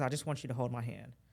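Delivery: plain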